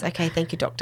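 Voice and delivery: soft, low, hushed voice, kept quiet.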